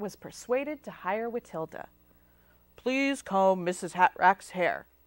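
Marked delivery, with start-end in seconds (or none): 2.8-4.8 begrudging grumble, low and loud. Narrating a story, a boss gives an instruction to her new hire: grumbling. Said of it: "Aunt Bort grumbled".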